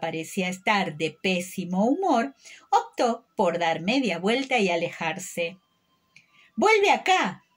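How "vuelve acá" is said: shouting, much higher and louder. The caterpillar calls after a girl who is walking away, shouting. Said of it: "Le gritó la oruga".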